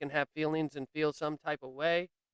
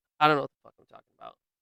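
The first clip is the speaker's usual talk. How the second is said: plain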